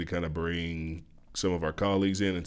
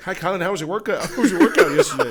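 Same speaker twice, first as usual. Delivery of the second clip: put-on very high, very loud, shrill little-kid voice; 12 semitones higher, 9 dB louder than usual. Retelling how a kid greets someone in the hallway: imitating a kid. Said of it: "She's like".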